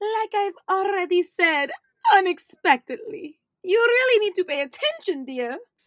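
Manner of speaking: grand, loud, theatrical mystic fortune-teller voice. Playing a psychic answering a doubting questioner, in the Madame Cambiare psychic voice. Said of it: "I am Madame Cambiare, a true psychic".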